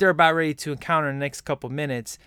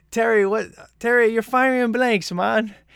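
put-on English accent, laid on, loud and high; 7 semitones higher, 5 dB louder than usual. Repeating a movie character's line: imitating an english accent. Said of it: "he's like".

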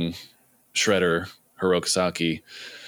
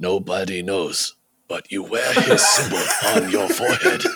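cartoon martial-arts master voice; 3 dB louder than usual. Act out his answer when asked where Hirokazaki is now, in a Splinter voice. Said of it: "You do that so well".

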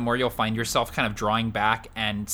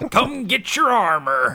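put-on Swedish accent, game-character style; 10 semitones higher, 6 dB louder than usual. Quoting Overwatch voice lines, in a Torbjorn accent. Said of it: "everyone can do a Torbjorn accent".

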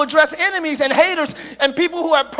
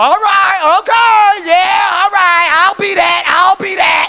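loud, mocking, insincere sarcastic tone; 3 semitones higher, 7 dB louder than usual. Acting out someone agreeing with an adversary: acting out sarcastic agreement. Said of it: "That ain't agreeing".

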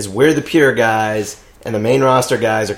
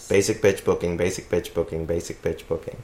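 soft, rapid, said three times fast; 5 semitones lower, 9 dB quieter than usual. Taking up a challenge to repeat the phrase three times fast. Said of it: "Now say it three times fast".

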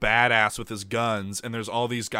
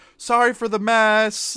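mock polite tone, higher and louder; 12 semitones higher, 7 dB louder than usual. Retelling how a crew apologizes while forcing through: imitating a really polite apology. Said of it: "really polite".

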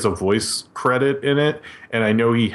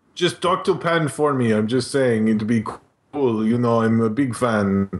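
put-on Italian-sounding accent. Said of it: "It sounds like an Italian guy".

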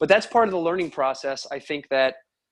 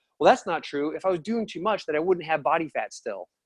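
put-on completely earnest, dead serious, unjoking delivery. Retelling a client's reply during an appointment: imitating someone dead serious. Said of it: "dead serious".

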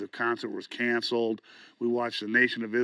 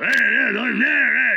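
very high, very loud, rough tough-guy punk holler; 13 semitones higher, 10 dB louder than usual. Retelling how a tour guy yelled while punk played: imitating a yelling tough-guy punk. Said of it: "tour guy was yelling".

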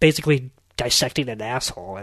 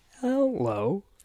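very slow, deliberate put-on talking-computer voice; 9 semitones higher, 8 dB quieter than usual. Introducing the show hosts, put-on Macintosh computer voice. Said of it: "the Macintosh voice".

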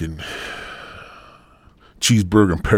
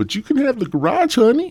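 high-pitched, sweet, sugary voice. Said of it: "My wife said".

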